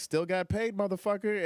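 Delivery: very high, defiant hollering yell. Recounting yelling from the back after someone shouted that he bombed: retelling a yell. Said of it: "I yelled from the back".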